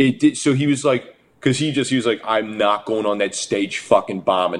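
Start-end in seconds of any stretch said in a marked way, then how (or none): 2.2-4.6 heavy, laid-on, put-on Bronx accent. Retelling a comedian's set after a cold room, heavy Bronx accent. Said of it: "he like this heavy fucking like Bronx accent".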